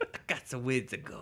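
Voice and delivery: New York Queens accent. Asked what was said, repeating his own words in a Queens accent. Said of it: "That's a Queens accent".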